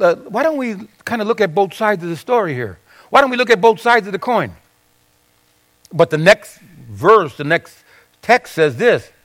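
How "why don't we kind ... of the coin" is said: soft, quick, timid, hedging murmur. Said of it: "timidly said".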